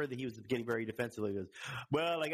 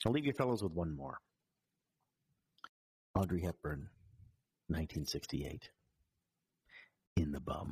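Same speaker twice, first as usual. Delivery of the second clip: put-on Irish accent; 8 semitones lower than usual. Repeating Sean Connery's parting line from a story: Sean Connery in Irish accent. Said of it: "now I'm doing an Irish accent".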